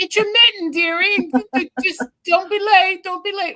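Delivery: put-on high British accent. Voicing a figurine handing Santa his mittens, as Mrs. Claus in British accent. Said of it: "Why does she have a British accent".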